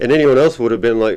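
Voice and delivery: ordinary talk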